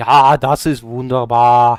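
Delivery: put-on heavy, lingering Austrian accent. Talking about learning German on Duolingo, doing a Schwarzenegger Austrian accent. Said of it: "His accent is just very funky to me".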